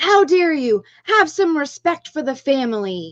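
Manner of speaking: indignant, angry yelling. Recounting a man who burst out the front door at them, retelling a yell. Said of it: "and yelled".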